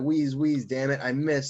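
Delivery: ordinary talk, nothing marked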